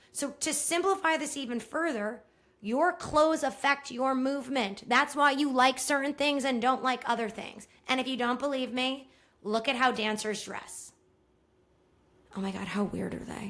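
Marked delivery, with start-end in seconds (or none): 12.4-13.5 hushed whisper, kept low. Talking to listeners as if dancers might overhear, whispering. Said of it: "I'm like whispering like they won't hear me".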